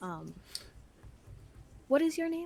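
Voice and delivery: hushed, high little whisper. Pulling another character to the back of the cart to ask its name, whispering. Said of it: "I'm I'm whispering like like".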